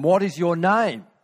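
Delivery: acted high, incredulous shout. Retelling a story in which a king asks again: retelling a shouted question. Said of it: "but shouted at him".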